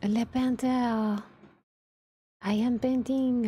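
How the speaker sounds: put-on French accent. Placing a figure and joking about it, in a put-on french accent. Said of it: "I don't know why I'm using the French accent".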